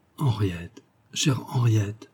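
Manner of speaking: soft, tender voice. A man stops beside a woman's armchair and repeats her name; tender voice. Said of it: "D'une voix tendrie".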